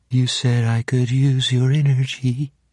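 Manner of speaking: tiny, barely audible, tearful voice. A boy speaks to the girl kneeling in front of him, in a very small voice. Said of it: "In a very small voice".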